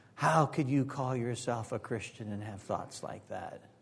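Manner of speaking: half-whispered voice. Acting out Satan accusing a believer from the other shoulder: Satan half-whispering. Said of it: "he whispers in the other ear".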